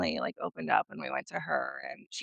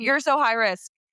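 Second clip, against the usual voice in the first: mock yelling, higher and louder; 5 semitones higher, 6 dB louder than usual. Retelling a doctor's appointment about twins: imitating a doctor yelling. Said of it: "yelled at me for having twins".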